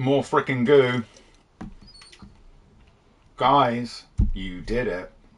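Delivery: mouth full of food. Announcing the result to everybody after counting to seven, talking while chewing. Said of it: "sorry about the chewing".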